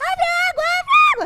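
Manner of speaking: very high, shrill, very loud shout. Retelling a panicked moment with burning paper: imitating someone shouting. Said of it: "ela gritava assim".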